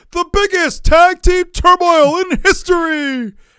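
high, loud, slow, booming wrestling-announcer hype style.

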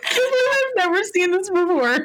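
very high, teary, tearful crying voice. Reacting to something seen on Facebook for the first time, kind of crying. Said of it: "I'm really kind of crying".

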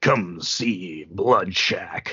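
deep, slow vintage exploitation-trailer announcer voiceover. Describing 60s exploitation-film commercial voiceovers: 60s commercial announcer voice. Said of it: "the incredible art of the 60s commercial voiceover... a guy who sounds like this".

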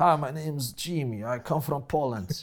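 put-on dodgy Eastern European accent. Imitating how one spoke in first year at university: imitating a typical Eastern European accent. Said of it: "I spoke like typical Eastern European".

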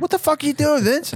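play-acted shrill, very high, sudden shout. Retelling how the tech lead shouted when the cabinets shook: imitating a shout. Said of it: "he shouted out".

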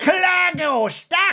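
put-on Scottish accent. Voicing a trapped character named Clargo: Scottish-ish accent for Clargo. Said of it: "that was, like, Scottish or something".

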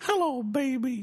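very high little talking-toy voice. Imitating a little toy belonging to a son: imitating a child's toy voice. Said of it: "that's a little toy my son has".

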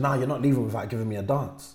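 ordinary talk, nothing marked

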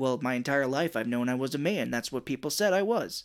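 ordinary delivery

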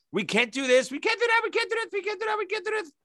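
high mock imitation voice.

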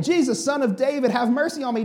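mock shouting. Retelling a scene where someone keeps crying out to jesus, retelling a shout. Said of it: "they rebuke".

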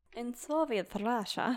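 quick put-on Russian accent. Introducing a podcast story set in Soviet Russia, in a Russian accent. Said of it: "Was that an accent?".

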